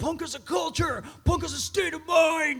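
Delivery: DC punk-scene voice. Impersonating the DC punk scene people from early days: imitating Dischord Records people. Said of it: "Was that a pretty good impersonation?".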